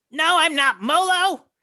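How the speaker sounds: shrill, booming, very high, loud, drawn-out shout. Voicing a fleeing kobold answering a question: kobold shouting back. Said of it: "it shouts that back".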